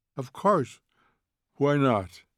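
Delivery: ordinary delivery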